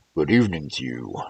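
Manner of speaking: big bear voice, deep soft baritone. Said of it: "Now I will speak in baritone".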